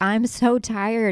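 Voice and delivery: worn-out, tired, sobbing, pleading voice. Recounting being dragged along and complaining, retelling own tired crying. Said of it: "And I'm like crying".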